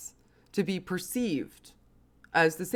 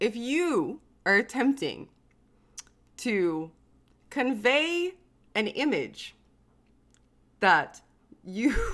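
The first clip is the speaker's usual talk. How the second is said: very slow speech with laughter running through it; 4 semitones higher than usual. Commenting on something ridiculous, laughing while talking. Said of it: "it's hard not to laugh because it's so ridiculous".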